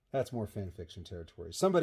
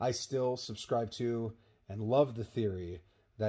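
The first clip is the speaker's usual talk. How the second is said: ordinary talk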